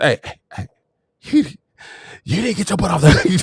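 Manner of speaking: hushed, whispered, fussing scolding tone. Retelling scolding the kids at school: imitating a whispered scolding. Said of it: "learn how to whisper fuss like Terrence Thomas".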